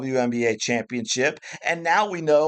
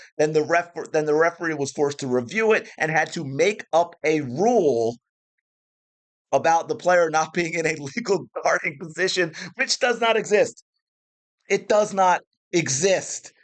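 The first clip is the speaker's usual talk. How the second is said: getting fired up, venting hard, heated rant. Complaining about a referee's call in a basketball game, worked up. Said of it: "as you can hear it in my voice".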